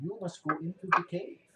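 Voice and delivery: put-on Russian accent. Game master voicing the Matrushka telling Painvin where to go, Matrushka's Russian accent. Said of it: "And she says it in the Russian".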